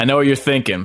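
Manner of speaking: ordinary delivery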